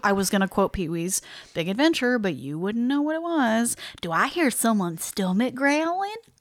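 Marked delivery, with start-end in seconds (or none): 4.0-6.2 put-on Southern Texas accent. Co-hosts bantering after talking about food, in a Texas Southern accent. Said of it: "In my good Texas Southern voice".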